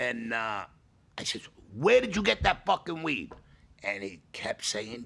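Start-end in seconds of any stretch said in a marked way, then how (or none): 1.8-3.3 yelling and screaming, high-pitched. Retelling questioning Rob about the weed: retelling own yelling. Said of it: "I'm yelling and screaming at Rob".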